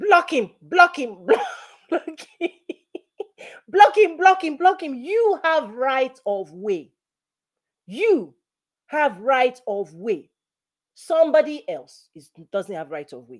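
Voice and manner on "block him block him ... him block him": high, urgent, loud shouting. Recalling driving, the speaker repeats what their dad shouted; retelling dad's shouting. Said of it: "he shouted".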